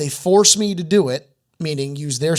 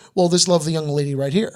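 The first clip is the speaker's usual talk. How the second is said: ordinary delivery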